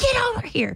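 very high yell kept hushed under the breath. Retelling calling a dog back inside at night: retelling a hushed yell at a dog. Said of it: "I'm just yelling at him as quietly as I can".

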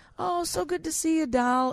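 mock, very high, totally loving tone. Describing a man who calls people doll, imitating his loving greeting. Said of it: "he says it like totally lovingly".

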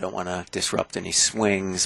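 talking quietly. Show host on a golf course near golfers teeing off, talking quietly. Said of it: "I'm just trying to not talk too loud".

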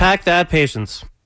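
normal talking voice

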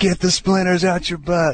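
high, slow, mock heckling yell.

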